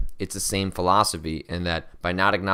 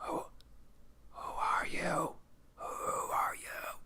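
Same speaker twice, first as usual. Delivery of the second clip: eerie, creepy, whispered monster voice; 11 semitones higher, 16 dB quieter than usual. Streamer addressing a viewer watching the stream, in a creepy monster voice. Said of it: "Now I sound like a creepy monster in somebody's dreams".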